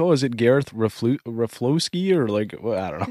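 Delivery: put-on as thick a Canadian accent as possible. Retelling own attempt to pronounce a last name: very Canadian accent. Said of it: "the most Canadian way".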